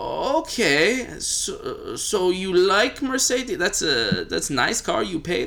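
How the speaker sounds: put-on German accent. Speaker acting out a person questioning them about a Mercedes, German accent. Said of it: "That was a very, very interesting German accent".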